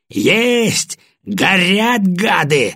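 rapturous, high, swooping cry of triumph. Narrator reads a colonel's line during tank cannon fire: excited shouting. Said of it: "восторженно орал полковник".

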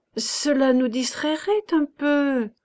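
stammering. A woman replies to a man who dismisses her idea, stammering. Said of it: "Elle balbutia".

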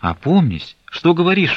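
very high, urgent, coaxing, persuading tone. A mother urges her refusing daughter to go to her father, persuading. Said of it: "уговаривала ее Аксинья Захаровна".

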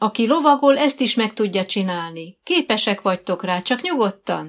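calling out loudly, shouted. Dóra arrives at the bench and calls to the girls who cannot sign, shouted. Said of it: "kiáltotta Dóra".

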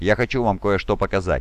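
ordinary delivery

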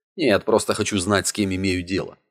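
ordinary delivery, nothing marked

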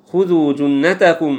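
normal talking voice

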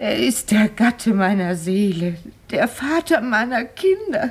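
words broken by sobs, tearful and weeping. Told not to cry, a woman keeps speaking about her husband, crying. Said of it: "Bitte weinen Sie nicht".

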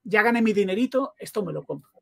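ordinary talk

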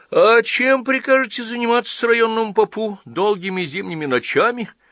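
laughing, very high-pitched. Chkamasov answers Polovinkin's question; laughing. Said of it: "смеялся Чкамасов".

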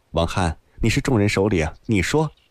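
ordinary delivery

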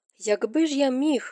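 grimly. Ned answers a woman's demand, grim. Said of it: "похмуро мовив Нед".

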